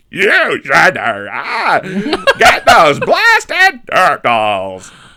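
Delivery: very loud, high, sing-song, drawn-out swooping drawl. Showing the other speaker what the Krang voice sounds like: Krang voice. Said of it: "the Krang voice is like".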